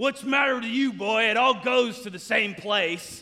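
really gruff, rough-edged, loud man's voice. Retelling a man's reply as he mixed food on his plate, Dowdy's gruff voice. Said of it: "Dowdy had this really gruff voice and he said".

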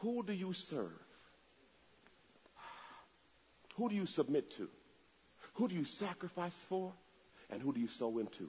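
very slow, hushed, each phrase deliberately spaced out. Speaker repeats the four questions to the listeners, saying it real slow. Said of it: "I'm going to say it real slow".

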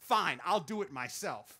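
normal talking voice

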